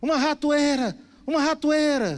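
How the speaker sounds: mouse-like screaming in panic, high and loud.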